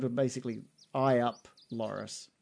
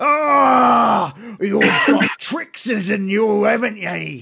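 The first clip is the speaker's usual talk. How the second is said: very high, very loud, shrill, exasperated orc yell; 9 semitones higher, 10 dB louder than usual. A game master voices an orc whose javelin just bounced off a player, frustrated orc voice. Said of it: "you can hear the orc's frustration".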